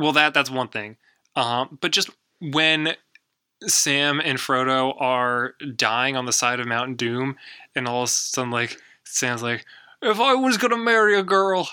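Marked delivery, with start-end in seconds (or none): 10.0-11.7 very high, loud, shrill, terrible put-on English accent. Retelling Sam's line while describing a Mount Doom scene, bad Sam impression. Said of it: "I'm going to take that accent back".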